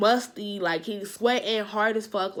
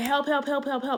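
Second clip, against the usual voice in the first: mock urgent repeated high cry, kept contained; 5 semitones higher than usual. Recounting being stuck where nobody could hear him, retelling screaming for help. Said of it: "I'm screaming".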